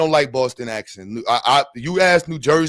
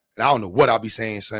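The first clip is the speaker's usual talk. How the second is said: ordinary talk, nothing marked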